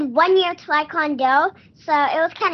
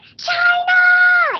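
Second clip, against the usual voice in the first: put-on girl yelling, higher and louder; 5 dB louder than usual. Retelling how a little girl at the red carpet called out: imitating a girl yelling. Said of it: "she keeps, like, yelling".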